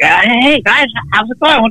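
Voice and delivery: very high, slow, drawn-out voice. Retelling meeting an actor on set, doing a Crispin Glover impression. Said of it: "doing the Crispin".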